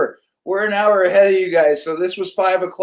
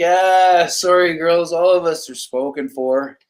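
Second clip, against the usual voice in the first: acted chuckling, amused, laughing through the words. Retelling a refusal to two girls at the end of the night: imitating laughing while talking. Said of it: "kinda laughing".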